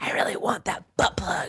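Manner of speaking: put-on mean whisper. Retelling what she whispered to the other contestant near the contest's end: retelling a mean whisper. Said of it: "I've whispered to him already".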